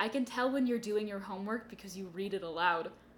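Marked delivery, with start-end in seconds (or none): none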